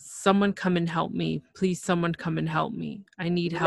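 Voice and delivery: ordinary talk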